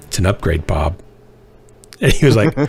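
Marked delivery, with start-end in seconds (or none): 0.1-1.0 mock flat deadpan delivery, lower. Telling a story, the speaker quotes a woman answering a man, retelling a deadpan reply. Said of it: "deadpan right in the face".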